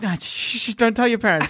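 settling-down, reassuring, soothing shh-shh. Acting out a zombie worker hushing a scared guest: imitating someone calming you down. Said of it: "a zombie to try and calm you down".

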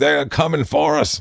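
put-on old-school wrestling-style preacher cadence. Explaining a voice just done to a co-host, showing the wrestler preacher cadence. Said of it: "That kind of cadence back in the day".

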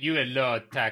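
Russian-accented speech. Asked by a co-speaker to do a russian accent, repeating a phrase in a russian accent. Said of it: "That's quite good".

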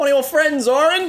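very high, shrill shouting. In a told scene, one of the friends shouts from the back, shouting. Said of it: "Shout from the back".

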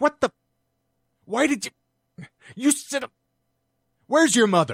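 flustered, very high, loud, cut-off sputtering. Describing a father stopping himself from cursing at his child, imitating dad's cut-off sentences. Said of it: "he sounds like a, an absolute moron".

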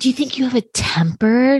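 put-on soft, gentle, soothing voice. Speaker retells what Rinna said to her, imitating Rinna's soft therapy voice. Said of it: "Rinna's in this like soft therapy this voice".

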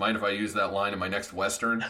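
normal talking voice

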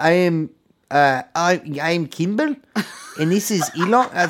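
put-on South African accent. Asked to do the accent while playing Kimball introducing Elon; South African accent. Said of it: "you do the accent?".

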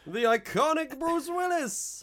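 very high, loud, pompous boxing-announcer voice. Mimicking a trailer narrator announcing the returning cast: boxing announcer voice. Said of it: "he sounds like a boxing announcer".

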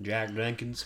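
soft, exaggerated, over-the-top American accent. Asked to say a name in the most american accent possible, exaggerated american accent. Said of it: "Can you say Jenkins in the most American accent possible?".

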